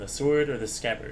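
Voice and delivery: ordinary talk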